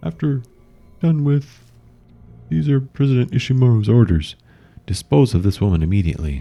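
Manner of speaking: dignified composed voice. In a vision, one voice cuts another off and repeats the orders: dignified voice. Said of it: "The dignified voice cuts him off and repeats the orders. / The dignified voice cuts him off and repeats the orders".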